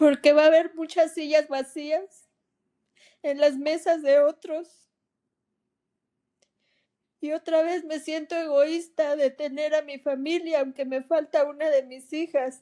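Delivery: speaking through tears. Asked on Christmas why she is crying, she answers, crying while talking. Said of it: "¿Por qué lloras".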